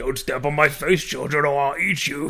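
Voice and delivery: put-on British politician voice. Voicing a floor that eats children: Boris Johnson impression. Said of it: "it sounded like Boris Johnson".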